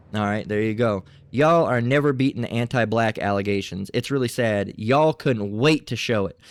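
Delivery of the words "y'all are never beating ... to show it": ordinary delivery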